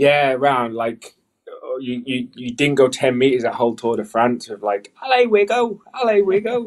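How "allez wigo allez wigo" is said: put-on very strong British accent on "allez", higher and louder. Retelling roadside fans cheering the rider: imitating fans' very British accent. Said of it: "the most British accent for the word allez".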